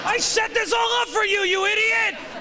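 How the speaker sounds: yelling, high-pitched and frantic.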